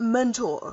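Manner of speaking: sarcastic, sneering stress on the word "mentor". Voicing a prosecutor calling a witness to the stand: sarcastic stress on mentor. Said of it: "Why are you saying mentor like, all sarcastic like?".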